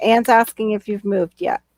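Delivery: ordinary delivery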